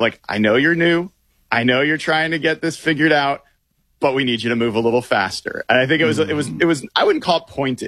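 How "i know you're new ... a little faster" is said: nurturing, coaxing parent tone. Retelling a coach's words to a new player: imitating Mike McDonald's nurturing parent voice. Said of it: "the nurturing".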